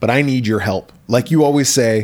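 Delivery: ordinary talk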